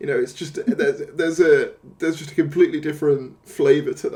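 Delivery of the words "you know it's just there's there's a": plain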